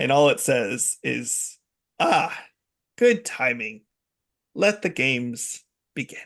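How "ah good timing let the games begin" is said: comic-book villain voice. Voicing the Riddler as the building's lights go out: Riddler voice. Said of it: "the voice of the Riddler".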